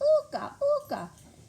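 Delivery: very high-pitched, loud, screeching chicken call.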